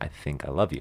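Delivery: halting, hesitant, very quiet and soft delivery. Retelling how she first said i love you: imitating a hesitant voice. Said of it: "She said it very hesitantly".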